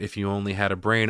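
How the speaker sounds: plain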